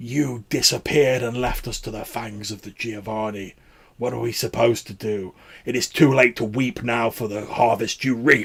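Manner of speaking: loud, rasping, lifeless dead-sounding voice. Narrator voicing characters arguing back in a story, raspy, dead voice. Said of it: "in these sort of like raspy, like dead voices".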